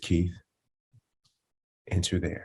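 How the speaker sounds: very hushed, gentle, calm, soothing voice. Retelling how Brian answered expressed impatience: imitating Brian's soothing calm voice. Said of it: "in Brian's, like, soothing, calm voice".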